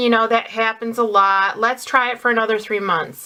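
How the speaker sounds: ordinary talk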